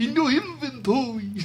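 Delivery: put-on New York vampire accent, high pitch. Repeating the line on purpose in a New York vampire voice. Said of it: "a New York vampire".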